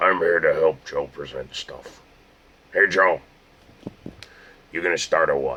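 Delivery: toy action figure voice.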